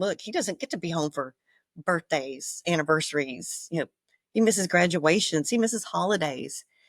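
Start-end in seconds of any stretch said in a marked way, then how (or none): none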